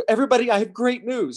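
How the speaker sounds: put-on high, tearful announcer voice. Retelling what a woman on the news said: imitating a crying newscaster. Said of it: "And she's crying".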